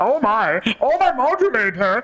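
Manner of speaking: high, slow, swooping cartoon voice. Showing an early stand-up bit of cartoon impressions: Marvin the Martian voice. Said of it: "Marvin the Martian having sex".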